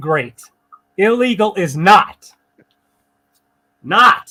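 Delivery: slow, angry yelling with dragged-out words. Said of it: "I'm sorry I'm yelling".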